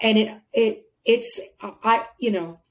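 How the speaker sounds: tripping over words. Mid-conversation, getting tongue-tied while praising a feature, stuttering. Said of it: "I'm stuttering".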